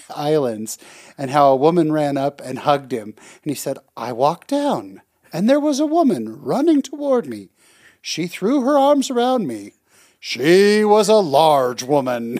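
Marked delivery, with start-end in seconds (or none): 4.0-12.4 bad high, swooping, sing-song storyteller voice. Retelling what a man said at a conference, do a bad impression of a conference speaker. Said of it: "that was the worst impression".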